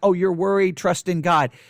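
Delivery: ordinary talk, nothing marked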